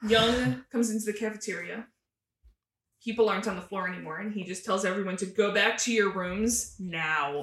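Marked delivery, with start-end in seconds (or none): 5.2-7.4 slow, full, all-out dad voice. Recapping an episode where Young orders everyone back to their rooms, full dad voice. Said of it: "Full dad voice".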